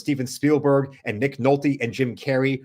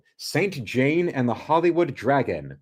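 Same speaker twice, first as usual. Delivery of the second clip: usual speaking voice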